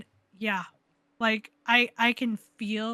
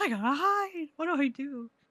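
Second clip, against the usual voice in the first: put-on panicked voice, higher pitch; 5 semitones higher, 3 dB quieter than usual. Retelling hiding in a game when the door jiggles: imitating own panic. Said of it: "I panic in the best kind of way".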